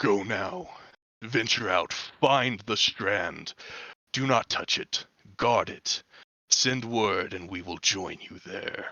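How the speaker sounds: dark voice echoing as if from far below. A game narrator voices an unseen speaker calling from below, low, dark, deep voice. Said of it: "this just low, dark, deep voice echoing from down below".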